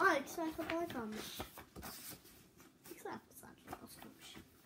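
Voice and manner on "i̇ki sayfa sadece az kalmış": fast, soft, quiet whisper. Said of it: "sessiz sessiz söylüyorum".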